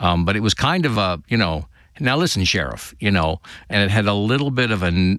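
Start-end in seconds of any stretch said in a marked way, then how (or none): 2.0-2.9 slightly nasal character voice. Showing how he voiced the character Cooper: nasal Agent Cooper voice. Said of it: "almost a nasal quality to it".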